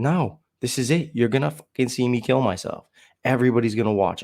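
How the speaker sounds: put-on drunken-sounding, angry, hateful tone. Retelling own drunken words at a party: retelling own angry words. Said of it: "so angry, and so hateful".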